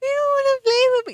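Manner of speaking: play-acted very high-pitched, whiny childish voice. Talking about kids who come over and complain, imitating their whiny tone. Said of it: "They do it in the whiny tone".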